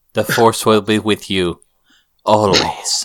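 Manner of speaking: spooky, eerie, ominous villain voice. While someone watches a trailer, the speaker does a spooky Emperor voice. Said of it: "And now you're just being spooky".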